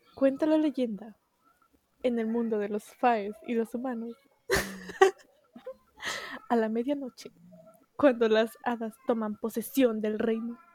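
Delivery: dramatic trailer-style announcer voice. Summing up a book like its synopsis: announcer voice. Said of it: "Con voz de locutor y todo".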